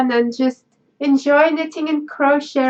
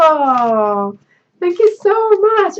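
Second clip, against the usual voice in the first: tearful, on the verge of crying, slow, long "oh"; 3 semitones higher than usual. Thanking viewers after reading a touching note aloud, tearing up. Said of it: "I really, really am just tearing up".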